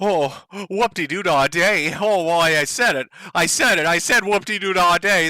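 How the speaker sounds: mock anger, fake outrage. Mocking a politician's clip with a fake swear: mock anger. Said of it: "That's how angry I am".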